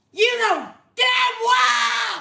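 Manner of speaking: high scream, well dragged out. During a heated argument, screaming back at the other person. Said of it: "You don't need to scream".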